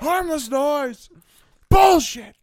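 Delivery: very loud, high-pitched shout. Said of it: "he's just shouting the most out-of-pocket stuff".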